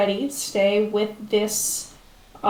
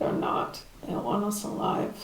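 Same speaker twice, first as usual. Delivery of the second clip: very quiet, breathy, hushed whisper under the breath; 8 dB quieter than usual. Narrating a character's reply to a player's murmured question: very quiet tone. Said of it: "in sort of the same very quiet tone".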